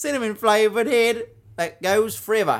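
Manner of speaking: put-on Australian accent. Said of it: "was that Australian accent".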